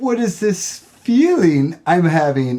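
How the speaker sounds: acted high, cracking, scared voice, close to tears. Retelling a boy's reaction to his first horror movie, imitating Jude's cracking voice. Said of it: "His voice was cracking".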